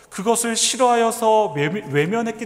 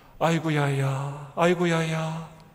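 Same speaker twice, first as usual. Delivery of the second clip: put-on mournful, lamenting Gyeongsang dialect in elderly style; 4 semitones lower, 3 dB quieter than usual. Preacher voicing Jesus's lament over Jerusalem the way elders speak, Gyeongsang dialect elder. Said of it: "경상도 사투리인지 모르겠습니다".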